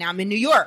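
ordinary delivery

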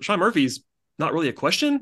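ordinary talk

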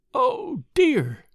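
tearful groan of dismay. A woman who has just begun to cry over her Bible speaks; groaning. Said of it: "she groaned".

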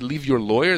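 plain

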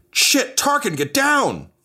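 sudden, very high, swooping shouted yell. Voicing a character who spots the player in the dark: character yelling a warning. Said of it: "she yells just like".

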